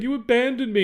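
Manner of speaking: play-acted, very high, accusing shout. Retelling a film scene on a falling plane: imitating Charles yelling. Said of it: "as Charles is yelling at him".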